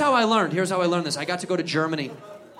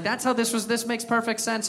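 ordinary delivery

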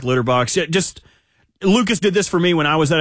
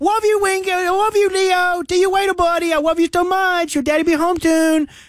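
put-on very high-pitched doting baby voice; 13 semitones higher than usual. Retelling talking to a cat as a neighbor overhears, in baby talk. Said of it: "Everyone does the baby talk".

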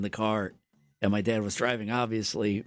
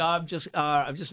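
ordinary talk, nothing marked

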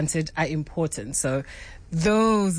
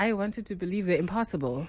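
usual speaking voice

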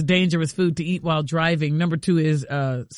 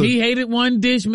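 usual speaking voice

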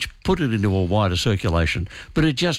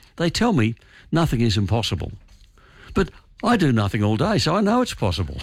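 ordinary delivery

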